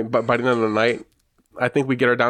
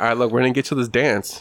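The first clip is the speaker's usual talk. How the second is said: usual speaking voice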